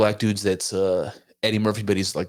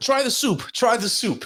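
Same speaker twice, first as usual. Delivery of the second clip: put-on elderly man voice, higher; 14 semitones higher than usual. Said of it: "my brother will do this joke still".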